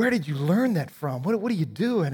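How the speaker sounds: loud, horrified, appalled outburst. Retelling a dad catching his kid smoking, as a mock-appalled father. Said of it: "dad's just appalled".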